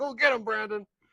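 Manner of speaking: high, cheering, encouraging shout. Retelling what a guy yelled at the gas bar: imitating someone yelling. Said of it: "I get a guy yelling".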